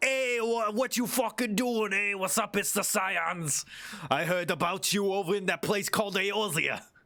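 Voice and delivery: put-on Jersey accent. Imagining dragons met in the New World talking, New Jersey accent. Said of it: "New Jersey accent".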